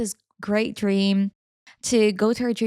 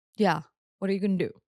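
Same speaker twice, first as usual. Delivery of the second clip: daring, taunting tough strongman voice; 2 semitones lower than usual. Imagining the sister's fiance with arms crossed: strong man voice impression. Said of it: "that's my impression".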